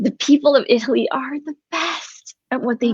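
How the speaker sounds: welling up with happy tears. Speaker breaks off mid-sentence, getting emotional. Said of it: "I'm getting emotional".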